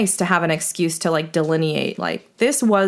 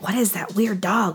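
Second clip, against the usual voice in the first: put-on whisper. Retelling what two walkers said about a dog in the park: imitating a whisper. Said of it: "kind of whispering to each other".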